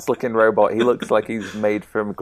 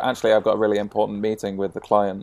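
normal talking voice

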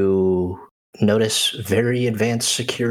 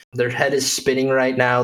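ordinary delivery

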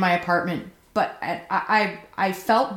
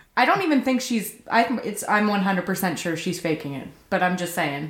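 plain

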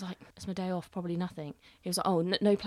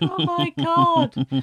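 mock sobbing wail, very high and loud; 10 semitones higher, 9 dB louder than usual. Retelling seeing the award news in a picture: imitating own crying. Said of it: "on my knees in the middle of the lounge crying".

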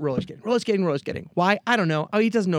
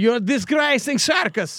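put-on higher-pitched Russian accent; 5 semitones higher than usual. Imitating a circus trainer who yells at a clumsy bear: Russian accent. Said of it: "Good accent".

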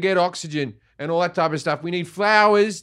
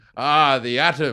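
ordinary talk, nothing marked

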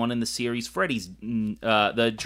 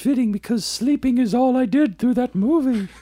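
put-on cartoon bear voice, much higher, louder; 13 semitones higher, 6 dB louder than usual. Making an unplanned remark about sleeping through a movie, in a really good Pooh Bear voice. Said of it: "that was a really good Pooh Bear".

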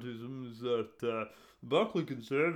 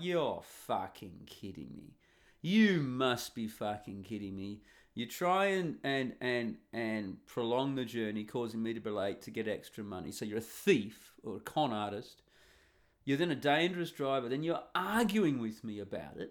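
plain

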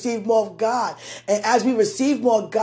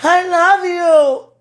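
loud, high joyful weeping, crying through tears; 8 semitones higher, 7 dB louder than usual. Speaking of a love precious to God, crying with joy. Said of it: "It's a weep of joy".

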